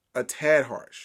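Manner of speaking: words a tad leaned on with heavy stress. Giving feedback on someone's delivery: stress on a tad. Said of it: "I'm going to emphasize the word a tad".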